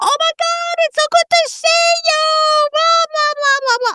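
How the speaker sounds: shrieking, very high scream. Retelling how a woman spotted a friend far away, retelling a scream. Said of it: "she started screaming".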